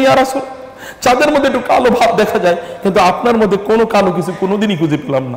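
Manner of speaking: ordinary talk, nothing marked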